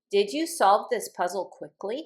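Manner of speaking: pitch rising on the word "quickly". Demonstrating a yes-or-no question, rising on quickly. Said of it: "If I ask the question this way, my voice goes up".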